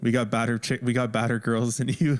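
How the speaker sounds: usual speaking voice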